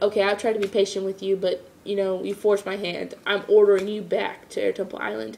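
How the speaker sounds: ordinary delivery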